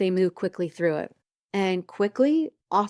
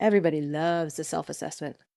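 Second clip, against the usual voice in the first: plainly sarcastic, feigned cheerful enthusiasm; 5 semitones lower, 5 dB quieter than usual. Introducing the self-assessment topic, joking with the audience: put-on sarcastic tone. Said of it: "I'm gonna be sarcastic for a moment".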